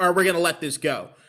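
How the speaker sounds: ordinary talk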